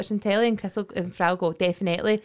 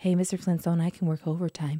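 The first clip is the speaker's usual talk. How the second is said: mock seductive, low, trying-to-be-sexy voice; 4 semitones lower, 5 dB quieter than usual. Retelling a flirty movie line to another speaker: mock sexy voice. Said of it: "That's me trying to be sexy".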